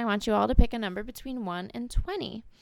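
normal talking voice

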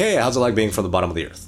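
light, playful, sing-song teasing tone. Retelling teasing a buddy from New Zealand: retelling a teasing jab. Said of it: "just kind of teasingly".

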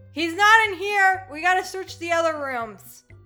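very loud, high, full-volume yelling. In a game, a guard is heard yelling, guard yelling. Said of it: "you just hear some like yelling like".

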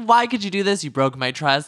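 put-on angry, heated, high-pitched voice. Retell how one woman confronted another for telling her secret, imitating someone so pissed. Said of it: "so pissed".

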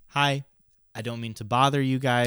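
ordinary delivery

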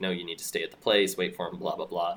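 ordinary delivery

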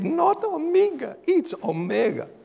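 high-pitched, upset, snappy voice. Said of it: "he was upset".

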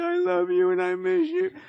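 put-on very high-pitched sobbing, tearful wail. Speaker mocking someone who claims not to crave it: mock-crying. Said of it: "You're just crying like".

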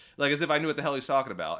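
normal talking voice

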